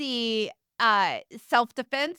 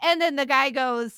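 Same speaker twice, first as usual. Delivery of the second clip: normal talking voice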